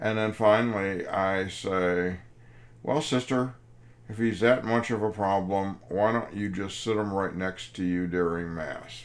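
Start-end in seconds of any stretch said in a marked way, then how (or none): none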